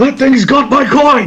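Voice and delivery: frantic, very high, loud, laughing shout.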